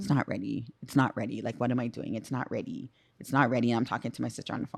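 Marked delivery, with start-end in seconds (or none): 0.0-3.7 play-acted weepy, tearful voice breaking into sobs. Retelling driving downtown before the show, imitating own crying.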